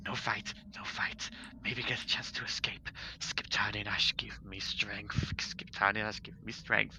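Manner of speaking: soft, feminine creature-voice mutter. The game master voices a creature the players overhear: feminine creature voice. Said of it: "it's a very feminine voice".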